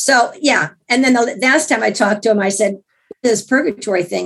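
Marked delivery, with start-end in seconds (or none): none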